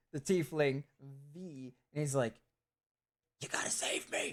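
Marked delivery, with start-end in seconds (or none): 3.4-4.3 hushed, soft, breathy, barely voiced whisper. Narrating a scene, voicing a character who whispers to two of the listeners, whispering. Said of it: "And he whispers it to the two of you".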